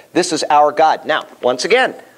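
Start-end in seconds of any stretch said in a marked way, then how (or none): none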